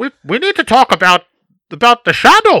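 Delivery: put-on villain voice. Discussing Dark Knight Rises, one speaker quotes the villain in a bad Bane impression. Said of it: "This is a bad impression".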